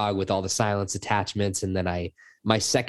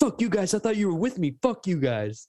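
put-on, very high, furious yelling; 11 semitones higher than usual. Retelling a teammate who ran off alone, then blamed the squad: retelling his yell. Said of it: "And then he yells at us".

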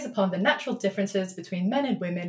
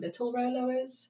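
ordinary talk, nothing marked

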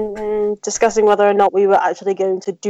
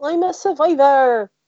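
joking, fake, pitched-up put-on West Country accent; 5 semitones higher than usual. Declaring yourself a survivor during a game check: put-on West Country accent. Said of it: "you gone right West Country there".

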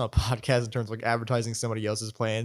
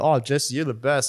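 ordinary talk, nothing marked

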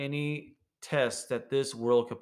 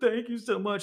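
very high, bawling, blubbering voice; 10 semitones higher than usual. Retelling a man's thanks to a speaker at a conference: imitating a man bawling. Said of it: "he's bawling".

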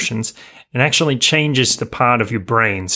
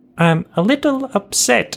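very high, tiny British cartoon man voice; 12 semitones higher than usual. Retelling how someone pictured the speaker as a cartoon: little cartoon British guy voice. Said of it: "like this little British guy with glasses".

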